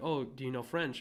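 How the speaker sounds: ordinary talk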